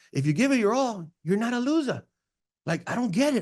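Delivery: high, put-on Hawaiian accent, puzzled tone. Retelling a kid's words: imitating a hawaiian accent. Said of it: "with a Hawaiian accent".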